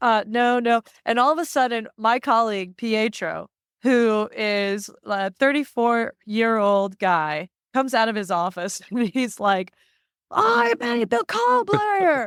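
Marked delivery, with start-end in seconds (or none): 10.3-12.3 very high, rough, angry, drawn-out outburst. Retelling how a coworker came out of his office, imitating Pietro's angry outburst. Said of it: "he was so mad".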